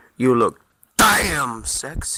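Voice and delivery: low, slow, unhurried musing aloud. Narrator reads Isaac thinking out loud to Sabine, in a slow and low voice. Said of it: "in a slow and low voice".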